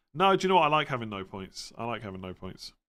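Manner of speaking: ordinary delivery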